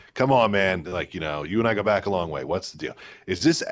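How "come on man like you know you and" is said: plain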